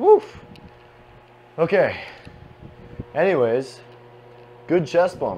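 winded, breathless speech. Right after a set of chest exercises, out of breath. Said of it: "I was a little bit out of breath".

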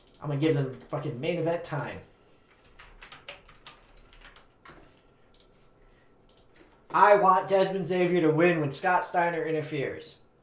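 combative, challenging, confrontational tone. Planning the show's matches with the other speaker, confrontational. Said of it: "said that so confrontationally".

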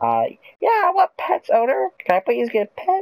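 tiny, very high, squeaky chipmunk pet voice. Speaker voicing their dog talking to its owner, in a chipmunk-like voice. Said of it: "I sound like a damn chipmunk".

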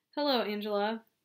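plain reading voice

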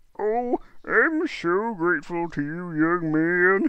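high-pitched cartoon character voice. Reading a story aloud, voicing the beggar in a Lorax voice. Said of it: "I'm slipping back into my Lorax voice".

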